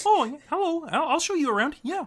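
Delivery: very high, squeaky cartoon-frog puppet voice. Playing a character who offers to show the party around: Kermit the Frog voice. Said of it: "you could have used the Kermit voice".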